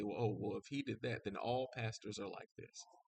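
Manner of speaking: normal talking voice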